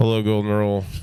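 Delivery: put-on bored, flat, lifeless cashier voice on autopilot. Imitating a cashier answering the business phone: bored, flat phone greeting. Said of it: "put some pep in your step".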